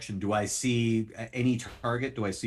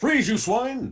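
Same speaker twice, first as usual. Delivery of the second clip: very high, shrill, shouted yell; 12 semitones higher, 7 dB louder than usual. Narrating the scene where Fisher spots Maximilian, Fisher yelling. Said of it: "Fisher just yells out".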